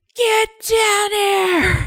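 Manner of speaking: mock parent voice, very high, shrill, drawn-out yelling. Joking about how listeners yell at their kids: imitating a parent yelling. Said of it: "how you guys are when you yell at your kids".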